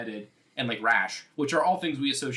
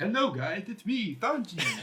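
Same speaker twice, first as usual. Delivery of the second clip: goofy voice, high and slow, simple talk; 8 semitones higher than usual. Mocking the Four Kids dub's performance, in the dub Sanji voice. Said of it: "acting like it was like a damn baby show for five year olds".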